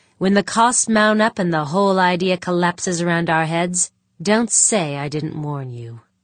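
plain reading voice

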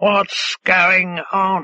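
cawing, croaky blackbird voice. A blackbird settled by a woman's hand speaks to her, croaking. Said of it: "it croaked".

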